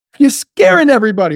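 high, loud, offended, accusing complaint. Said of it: "She got louder and louder".

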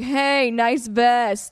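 acted-out yell. Retelling calling out to a man to catch his attention, retelling a yell. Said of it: "I like yell out to him like".

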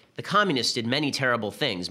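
usual speaking voice

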